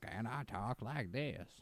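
very quiet, soft put-on Southern accent. Describing a Western-style character from a Rudolph movie, Southern accent. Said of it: "he has like a Southern accent".

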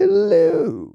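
bad British accent spoken at very high pitch.

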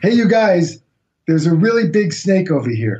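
mild, acted half-shouted yell, calling out. Retelling warning friends about a snake at night: retelling a yell. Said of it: "others claim I was yelling".

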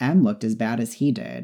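plain

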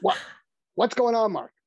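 put-on New York accent. Retelling how Larry answered when Mark woke him up, do Larry's New York accent. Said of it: "he had this New York accent".

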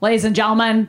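bad, failed Boston accent. Imitating a fast ferry announcer: bad boston accent. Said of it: "I can't do a Boston accent".

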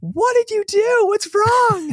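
shrill, very high yelling. Recounting his smoking mower in the front yard, he quotes Sue at the door: imitating Sue yelling out. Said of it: "yells out".

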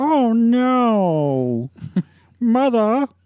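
very high goofy put-on voice, drawn-out no. Describing a comedy actor's movie role, imitating Billy Crystal silly voice. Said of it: "these silly voices".

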